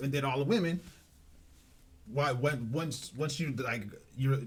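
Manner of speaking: slow, halting stutter, catching on each word. Explaining the women's role in his family to others, stuttering. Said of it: "I'm stuttering right now".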